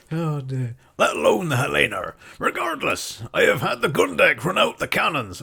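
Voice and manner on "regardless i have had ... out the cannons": put-on West Country pirate accent, pitched up. In character aboard a ship during a role-play, West Country accent. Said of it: "we're West Country again".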